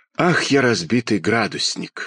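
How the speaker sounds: plain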